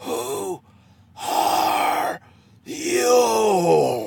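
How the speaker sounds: loud, deep, throaty, rough, guttural monster voice. A creature confronts a group of people, in a guttural, deep voice. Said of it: "The voice was guttural and deep".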